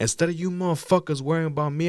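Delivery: heated, angry shouting. Retelling how he yelled at the cops over his friend, retelling his angry yelling. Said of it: "I'm yelling at the cops".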